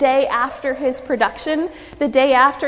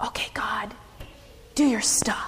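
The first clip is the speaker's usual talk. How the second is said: strange, carrying, meant-to-be-heard whisper; 4 semitones lower, 10 dB quieter than usual. Retelling what a man said as he stood back from the soaked altar, loud strange stage whisper. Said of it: "he says in sort of a loud, strange whisper".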